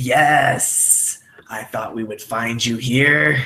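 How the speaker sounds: sibilant, hissing reptile-like voice. A game narrator voices a reptilian creature confronting the players: reptilian hiss. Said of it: "this very reptilian hiss go".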